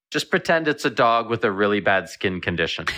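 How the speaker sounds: ordinary delivery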